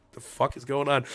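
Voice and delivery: ordinary talk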